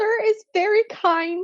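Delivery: very high, slow, squeaky voice. Reading Dobby thanking Ron during the gift giving: squeaky Dobby voice. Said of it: "He squeaked".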